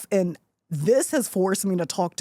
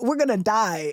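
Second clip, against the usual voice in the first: mock tearful blubbering, sobbing and crying through words; 2 semitones higher than usual. Recounting a snowy helicopter ride, retelling own crying. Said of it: "and I'm just crying".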